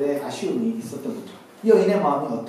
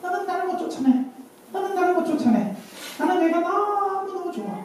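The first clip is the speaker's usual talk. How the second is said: distorted, very high, possessed demonic voice; 14 semitones higher than usual. Retelling how a possessed sister spoke during prayer, possessed demon voice. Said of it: "귀신의 목소리로".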